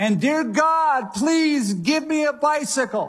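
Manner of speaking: play-acted very high, stretched-out, drawn-out shout. Retelling a joke about a boy's bedtime prayer: imitating a shout at the top of lungs. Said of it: "he shouts at the top of his lungs".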